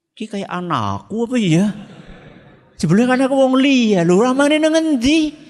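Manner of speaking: high, loud, annoyed, irritated complaining.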